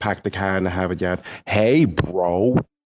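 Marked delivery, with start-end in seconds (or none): 0.0-1.2 put-on Boston-accented speech. Imitating a man warming up for his part, in a Boston accent. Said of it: "to get into his Boston accent. So he would go".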